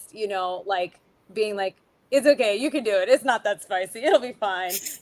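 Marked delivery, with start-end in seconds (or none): 2.1-4.8 put-on laughing while talking, louder. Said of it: "cry laughing about it".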